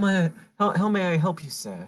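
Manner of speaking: attempted British accent. In a tabletop game, a player voices a man's line, trying for a british accent. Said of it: "as I try to perfect my British accent".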